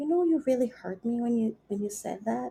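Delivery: soft, hushed, open, exposed, vulnerable voice. Speaker acting out someone they care about calling on the phone: imitating a soft, vulnerable voice. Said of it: "said in a soft, oh God, vulnerable voice".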